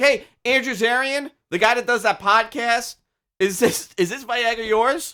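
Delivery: loud, high-pitched shrieking scream. Imagining a pharmacist calling out another medication: imitating a pharmacist screaming. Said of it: "she screamed".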